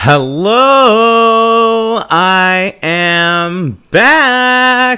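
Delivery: very high, drawn-out excited scream. Greeting listeners on returning, screaming excitedly into the mic. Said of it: "screaming in the mic".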